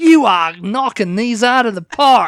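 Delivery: very loud with a slight Australian accent. Reacting to the other speaker's answer, the speaker slips into a slightly Australian accent. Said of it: "sounding a bit Australian".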